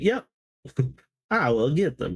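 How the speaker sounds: little helper creature character voice. Voicing the Scrappler as it nods and agrees: Scrappler's voice. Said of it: "that's the Scrappler's voice".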